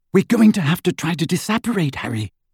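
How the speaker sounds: whispering. As Dementors close in on them, Hermione speaks to Harry; whispered. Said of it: "Hermione whispered".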